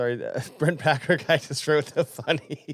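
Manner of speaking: words broken up by giggles and laughter. Reading out a viewer's comment, laughing while talking. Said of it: "I don't know why I'm laughing".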